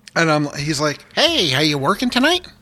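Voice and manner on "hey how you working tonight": bright, cheery, pitched-up voice. Retelling how a super nice guy greeted him: Ned Flanders voice. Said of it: "as soon as i do the voice".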